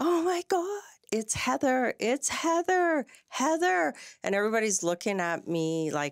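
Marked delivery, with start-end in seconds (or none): 0.0-3.9 acted out yelling, shrill and very high. Retelling coming out of the washroom: imitating own past yelling. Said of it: "I came out and I was yelling".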